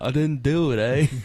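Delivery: put-on Canadian accent. Joking about how some people really sound, saying their line in a Canadian accent. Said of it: "from Canada".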